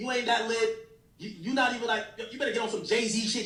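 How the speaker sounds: usual speaking voice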